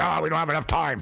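mock annoyed voice. Teasing the other speaker by imitating them: imitating someone sounding mad. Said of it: "You sound mad".

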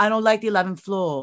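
put-on little child's British accent. Retelling what a four-year-old son said: little british accent. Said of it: "he has, like, a little British accent".

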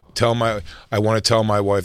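ordinary delivery

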